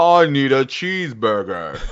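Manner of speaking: slow, put-on American accent. Mocking how a British actor would sound faking American: fake American accent. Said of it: "it isn't like".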